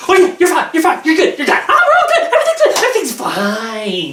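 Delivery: put-on overly hyper, wired, high, swooping manic chatter. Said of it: "stop saying it like you're on meth".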